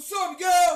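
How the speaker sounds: loud, high-pitched yelled delivery. Retelling a coworker's early-morning greeting: imitating a coworker yelling. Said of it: "What the fuck are you yelling for?".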